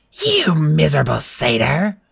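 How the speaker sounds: rough, furious snarl full of rage. The monster, just struck, snarls at the satyr with rage. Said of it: "she snarled".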